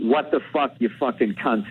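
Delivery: ordinary delivery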